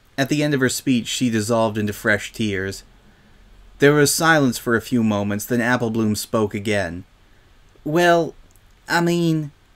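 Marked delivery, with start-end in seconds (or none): 7.9-9.5 halting, careful, high-pitched hesitant delivery. Applebloom begins speaking to Silverspoon again, hesitant. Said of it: "She began hesitantly".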